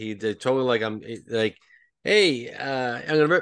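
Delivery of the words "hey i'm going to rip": put-on slow, drawn-out Boston accent. Recalling a man he heard, imitating how he talked: Boston accent. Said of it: "He had the Bostonian accent".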